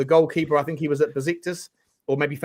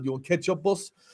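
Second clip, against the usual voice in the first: put-on Greek accent, much quieter; 6 dB quieter than usual. Asked whether he can do one, trying out a Greek accent. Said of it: "can you do a Greek accent?".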